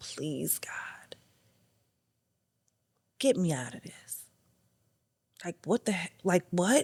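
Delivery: desperate, exhausted begging tone. Retelling crying to God in prayer: imitating own past begging. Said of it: "begging God".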